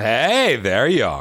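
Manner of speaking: slightly mocking delivery. Re-creating a recorded line, giving another delivery: a little more mocking. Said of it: "they wanted like a little more mocking".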